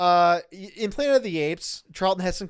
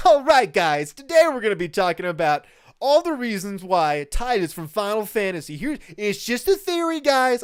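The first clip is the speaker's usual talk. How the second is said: put-on politician voice, jokey host-like celebrity voice; 3 semitones higher, 4 dB louder than usual. Imitating a YouTuber's theory video intro in a Trump voice. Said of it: "I'm still doing the Trump voice".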